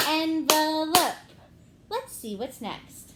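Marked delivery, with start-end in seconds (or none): 0.1-1.2 slow, loud, clapped out syllable by syllable. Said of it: "One more time".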